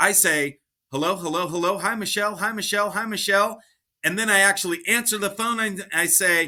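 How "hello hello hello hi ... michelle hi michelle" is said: morning-voice vocal warm-up run-through. Speaker shows how they warm up a morning voice before answering a call. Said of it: "I do something like this".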